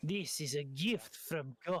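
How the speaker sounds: put-on hushed, soft whisper in a French accent. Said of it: "Why is he a Frenchman".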